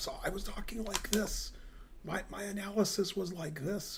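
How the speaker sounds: very quiet, hushed, nearly voiceless hoarse rasp. Recalling losing the voice at the event: imitating own lost voice. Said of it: "a good imitation of my voice, be-, being gone".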